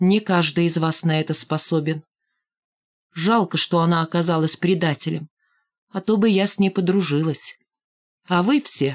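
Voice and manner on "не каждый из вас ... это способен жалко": ordinary delivery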